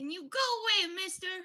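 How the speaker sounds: very high, tiny, small little voice. In a game scene, a character speaks from under the wings in a tiny voice. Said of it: "A tiny voice from under the wings".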